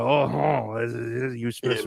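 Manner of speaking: put-on French skunk voice. Acting out a wrestler's ringside flirting: Pepe Le Pew voice. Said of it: "Like Pepe Le Pew".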